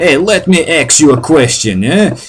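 New Jersey local's accent. Imitating guys who say axe for ask, in a new jersey accent. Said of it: "It's usually guys from Jersey".

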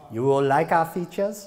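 poor put-on German accent. Mocking a technologist presenting at a trade show, in a bad German accent. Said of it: "never let a German technologists give a presentation".

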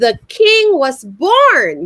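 very happy, joyful, celebratory, drawn-out "born". Demonstrating a line for others to repeat, very happy. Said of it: "we have to say it in a very happy way".

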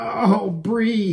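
high, pained gasping, catching breath. Waking sore after an exciting night, he sits up and speaks to Bree, gasping. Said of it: "he gasped".

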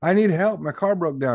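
play-acted high-pitched yell. Retelling how a woman in a movie starts yelling: imitating someone yelling. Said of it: "she just starts yelling".

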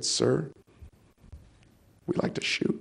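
soft, breathy whisper under the breath. Retelling how a veterans group member answered him: imitating a whisper. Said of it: "kind of whispered and said".

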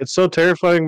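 high, cracking voice breaking mid-phrase. In a conversation, reacting with voice cracking. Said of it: "my voice cracked".

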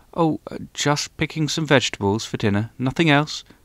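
bashful, slightly guarded. The hedgehog answers the mole's question, shyly and a little defensively. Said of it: "the hedgehog said shyly and a little defensively".

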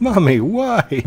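very high, poor-quality mummy voice. Mid-commentary, the speaker breaks off to do a bad mummy impression. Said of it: "That was a really bad mummy impression".

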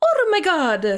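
high cartoon Italian accent. Redoing the plumber character's catchphrase, in a Mario voice. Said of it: "That was my best Mario voice".

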